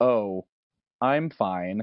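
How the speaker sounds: put-on flat, robotic voice, completely dead flat. Retelling how an unfazed woman answered three people: imitating a flat, robotic voice. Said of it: "she flatly said, in a weird robotic sort of way".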